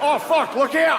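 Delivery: put-on Australian accent. Imitating an Australian office worker during a disaster: put-on Australian accent. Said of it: "Australian accent's one of those accents".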